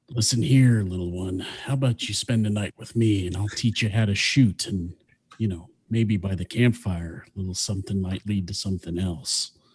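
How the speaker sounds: dashing Western cowboy hero voice. Speaker imagines what he'd say, switching to his Clint Eastwood voice. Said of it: "I'll use kind of my Clint Eastwood voice".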